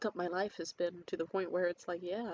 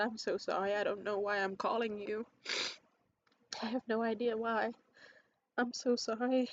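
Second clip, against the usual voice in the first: tearful, broken-up, sobbing voice; 3 semitones higher than usual. Retelling an unplanned phone call to him, retelling own past crying. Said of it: "I was crying my ass off".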